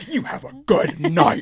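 nasty, spiteful, mean-spirited tone. Retelling a reply to a guard's goodbye: imitating saying it meanly. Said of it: "as mean as".

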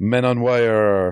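clumsy, high-pitched, bad fake French accent. Recalling the movie credits rolling, the speaker talks in a bad french accent. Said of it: "talking with a bad French accent".

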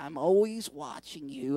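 very low slug monster lady voice, done badly. Asking if the listener remembers the slug woman in Monsters, Inc.: Monsters, Inc. slug lady voice. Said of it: "I can't do the voice good".

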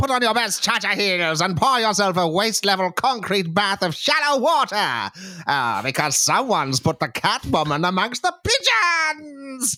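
very high, showy host voice, presenter style.

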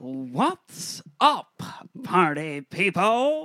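regal, high, lofty voice with swinging pitch. Performer retakes a greeting after being asked for more regal, regal Jack Nicholson impression. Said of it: "More more regal".

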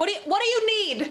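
very high, called-out shout. Playing a character calling back to an old man on the road: yelling back. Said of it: "I'm gonna yell back".

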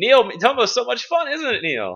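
high, mock sweet, fake-cheerful teasing.

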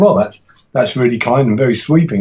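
plain

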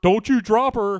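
mock yelling. Retelling a film scene where a character yells an order: imitating someone yelling.

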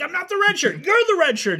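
triumphant, very high, swooping, crowing exultant yell. Retelling a scene where a character wins a fight with an alien, acting out exultant triumph. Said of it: "Now he's like exultant".

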